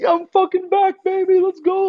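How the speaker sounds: acted, very high, pumped-up excited yelling. Retelling riding the course again in the helmet: retelling own yell. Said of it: "I'm yelling".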